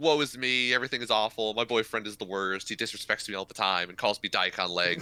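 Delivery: ordinary talk, nothing marked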